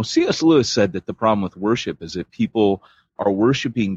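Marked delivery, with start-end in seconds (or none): none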